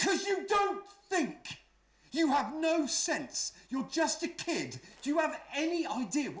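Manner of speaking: furious shouting. Answering the daughter's question about why he is flipping out: angry yelling. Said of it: "why are you flipping out like this?".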